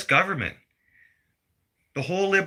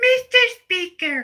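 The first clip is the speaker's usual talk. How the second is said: very high, slow, mocking put-on toddler voice. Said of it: "That's how she sounds".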